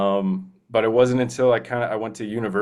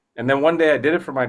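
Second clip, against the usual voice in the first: ordinary talk, nothing marked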